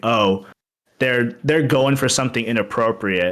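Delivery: plain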